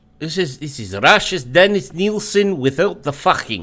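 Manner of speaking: put-on mixed Russian and Irish accent. Joking about a killer, then asked about the accent: mixed Russian Irish accent. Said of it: "Did you just kind of do Russian Irish right there?".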